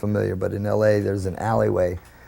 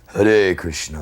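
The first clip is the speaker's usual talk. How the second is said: dark, deep, low voice; 4 semitones lower than usual. Recalling Prabhupada coming down the stairs, in Prabhupada's dark, deep voice. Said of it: "in this real dark, deep voice".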